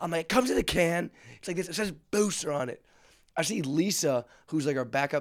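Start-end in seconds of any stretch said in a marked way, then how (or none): 0.2-2.8 put-on loud calling out, as over a noisy room. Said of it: "yelling at him 'cause the crowd is loud".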